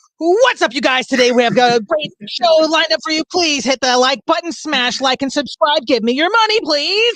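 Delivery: very high, hyped-up online video host voice. Joking about what they expected to hear instead, in a YouTuber intro voice. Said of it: "I was expecting something more like".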